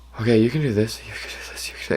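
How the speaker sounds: soft whispered speech. Retelling a pep talk in the bathroom before a phone call, retelling a whispered pep talk. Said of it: "giving myself a little whisper".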